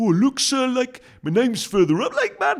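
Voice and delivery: put-on terrible Geordie accent, very high, very loud, shrill. Retelling children checking the sticker chart in class, in a terrible Geordie accent. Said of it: "that was a terrible Geordie accent".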